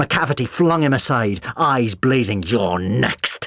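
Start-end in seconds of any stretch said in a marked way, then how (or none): 2.4-3.5 harshly spat-out words. Narrator reading McCavity's line to Jim after flinging him aside, spat. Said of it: "he spat".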